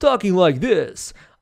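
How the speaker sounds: hyped salesman voice. Speaker demonstrating how they once sounded, in an infomercial salesman voice. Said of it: "sounding like a infomercial style salesman".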